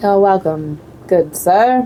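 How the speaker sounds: cold, lifeless, robotic AI-like delivery. Speaker answering a thank-you, sounding like a robotic AI. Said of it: "You sounded like a robotic A I".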